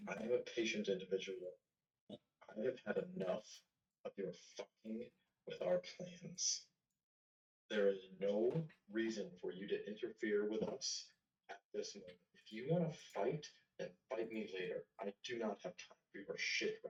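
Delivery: speaking in a hush. In a tabletop game, a character leans over another character's shoulder, in a hushed tone. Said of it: "like in a hushed kind of tone".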